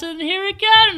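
very high-pitched, fast talking.

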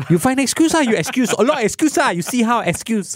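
put-on high-pitched ranting delivery in Italian accent. Imitating a coach's frustrated press conference rant: imitating Conte's Italian-accented rant.

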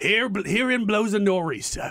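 imitated Australian accent. Retelling a man's boating story from the golf course, put-on Australian accent. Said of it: "slipping into an Australian accent here".

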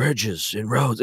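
earnest, weighty, very intent acted delivery. Retelling how the president says a line, imitating someone saying it intently. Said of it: "he leans in and he says it very intently".

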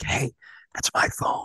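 hushed whisper, kept away from the mic. Retelling leaning in during an interview to a guest: retelling a whisper. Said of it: "and I whisper, like, off mic".

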